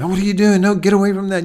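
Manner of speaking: loud, fast, barking delivery. Explaining that dogs understand tones, a speaker acts out barking at a dog. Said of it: "if you bark at them".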